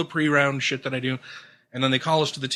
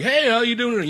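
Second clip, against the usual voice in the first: high, overly chummy, super friendly tone; 9 semitones higher, 4 dB louder than usual. Retelling how a stranger at a golf counter greeted: imitating a super friendly greeting. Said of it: "being super friendly".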